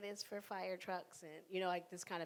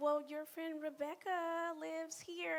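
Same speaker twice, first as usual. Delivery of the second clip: very high-pitched, loud announcer tone; 10 semitones higher than usual. Retelling a plane about to take off, imitating the mother speaking loudly.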